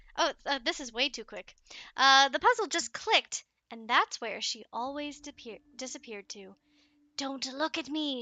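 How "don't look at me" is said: raspy, hissing, snake-like voice. Reading a story, the narrator's wife, revealed as the monster, speaks: raspy snake-like voice. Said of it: "she said with this raspy, snake like voice".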